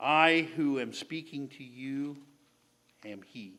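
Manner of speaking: put-on voice full of compassion. Quoting what Jesus says next to his listeners, retelling with compassion. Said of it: "hear the compassion in Jesus' voice".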